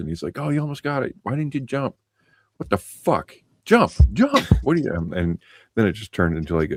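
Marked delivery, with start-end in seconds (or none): 0.4-4.9 play-acted, very high, rising, swooping yell. Speaker retells their father watching them lose a game, imitating dad yelling. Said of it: "my dad yelling at me".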